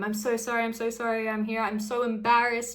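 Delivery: play-acted anxious apologetic pleading, repeated over and over. Retelling the repeated apologies of someone scared: imitating apologetic pleading. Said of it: "he was so apologetic every single time".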